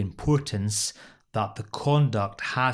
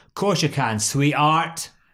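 patronising put-on Glasgow accent, loud and high; 5 semitones higher, 6 dB louder than usual. Reenacting a scene, answering a request for a word, with a put-on accent. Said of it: "Good accent for me too".

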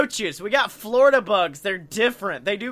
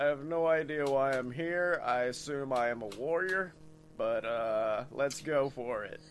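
very low, slow actor's voice; 7 semitones lower, 11 dB quieter than usual. Playing a character who fell through a portal into a fantasy world: Nick Offerman voice. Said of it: "my character will literally just be fucking Nick Offerman".

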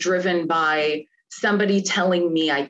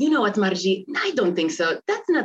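put-on strong, thick, heavy Polish accent; 2 semitones higher than usual. Retelling what her dad said to her, speaker uses a thick Polish accent. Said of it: "they both have very thick, thick Polish accents".

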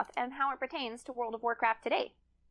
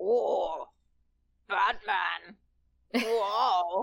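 deep, put-on villain voice; 4 semitones lower, 4 dB louder than usual. Joking about a character named Bane, doing a Bane impersonation. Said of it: "This is my fabulous Bane impersonation".

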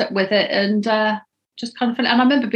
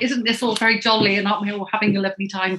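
ordinary talk

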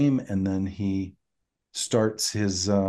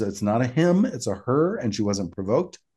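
normal talking voice

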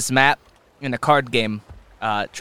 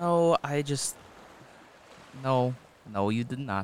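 disappointed, let down, much quieter; 10 dB quieter than usual. Assuring someone they did nothing wrong, disappointed. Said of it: "You sound so disappointed".

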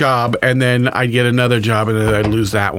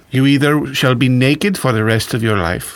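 weird, scary, flamboyant put-on German accent; 3 semitones higher than usual. Laying out two choices for someone, in a weird, flamboyant german accent. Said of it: "weird, scary, flamboyant German accent".

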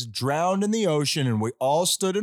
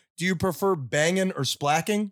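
normal talking voice

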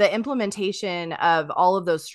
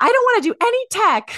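very high, drawn-out, put-on British accent; 5 dB louder than usual. Retelling what a friend said over tea, imitating Emma Louise's British accent. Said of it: "in her, like, adorable accent".

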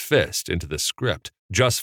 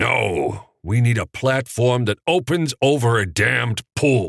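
insistent growl, pitched up; 5 semitones higher, 3 dB louder than usual. Answering back in a creative meeting, growled. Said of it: "growled Capra".

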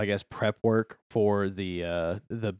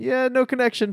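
high-pitched put-on voice feigning ignorance. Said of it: "Pop's like".

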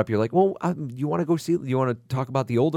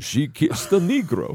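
spooky cartoon vampire voice. Asked to mash up Fiddler on the Roof and To Kill a Mockingbird, sounding like Count Chocula. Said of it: "You just sound like Count Chocula then".

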